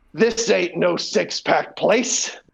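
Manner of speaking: rough, gravelly delivery. Retelling what a lady said while looking around their apartment, in her raspy voice. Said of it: "She's got this raspy voice".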